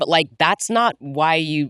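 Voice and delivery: ordinary talk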